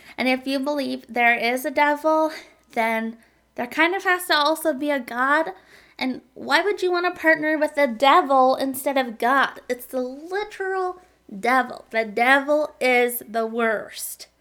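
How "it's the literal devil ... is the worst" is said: slow, weird, accidental southern twang. Speaker briefly slips into a weird southern accent without meaning to. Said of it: "adopted, like, a weird southern accent there".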